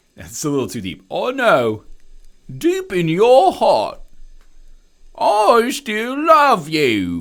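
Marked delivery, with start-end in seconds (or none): 1.1-7.2 very slow, weepy, put-on sobbing voice. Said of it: "do Michael Caine doing the best cry ever".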